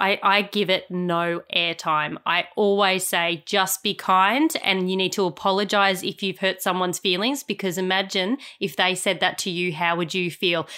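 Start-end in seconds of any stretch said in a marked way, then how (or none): none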